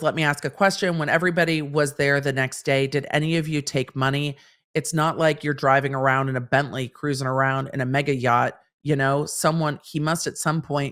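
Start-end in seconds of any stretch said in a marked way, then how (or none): none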